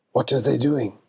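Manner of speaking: hissed, hissing voice. A game narrator voicing a gentleman who creeps up behind the players, hissing. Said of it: "who hisses".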